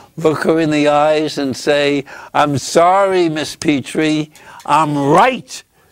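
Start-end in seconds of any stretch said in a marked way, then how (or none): 2.4-5.6 louder, higher confident voice. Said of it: "stand up even higher on your tippy tip toes".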